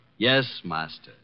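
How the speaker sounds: dry, sarcastic delivery. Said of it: "Just a little less sarcasm".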